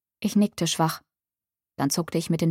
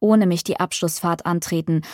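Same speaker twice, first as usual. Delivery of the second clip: ordinary delivery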